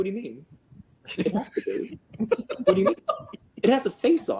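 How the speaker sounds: put-on baffled disbelief. Retelling Jason's reply about the stick: imitating someone stunned. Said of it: "Jason is so stunned the entire time".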